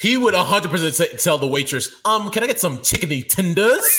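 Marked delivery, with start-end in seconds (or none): 2.1-4.0 high, tentative, halting voice, starting with um. Retelling how someone orders food from a waitress: imitating Tony. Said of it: "And he would say it like that".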